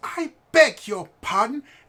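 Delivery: put-on tiny, prim, very high, posh aristocratic child voice. Narrating a kid the listener knocks over, posh aristocratic kid voice. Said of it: "how posh this kid is".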